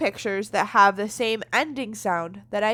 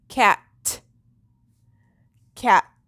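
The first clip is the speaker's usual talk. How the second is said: cat stretched out slowly, deliberate; 4 dB louder than usual. Showing a learner how to say a word to hear its last sound: saying the word slowly. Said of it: "Say it slowly with me".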